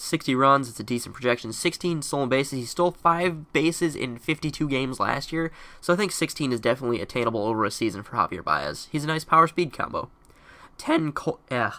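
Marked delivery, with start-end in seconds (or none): 10.8-11.7 voice cracking and breaking mid-word. Counting down player rankings for viewers, voice cracking. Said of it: "sorry about that voice crack".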